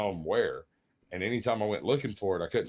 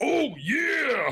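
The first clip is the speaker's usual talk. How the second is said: very high, loud belted yell, drawn-out "yeah"; 5 dB louder than usual. Retelling a game mod where the dragon breathes fire: Macho Man voice. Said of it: "I had the other dragon set up as Macho Man".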